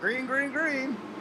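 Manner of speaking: high, excited, called-out delivery.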